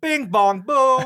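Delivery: very high, loud mocking squeal of a voice. Mocking a movie character's wacky lines, imitating Charlie's voice. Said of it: "You even do it in his voice".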